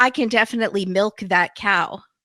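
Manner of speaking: usual speaking voice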